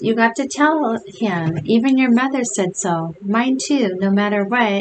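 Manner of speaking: ordinary delivery, nothing marked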